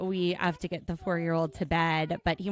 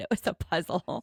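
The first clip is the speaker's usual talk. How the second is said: put-on thrilled, buzzing, eager exclamation. Retelling a houseguest walking around repeating a line: imitating Adrian's excited voice. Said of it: "He was so excited".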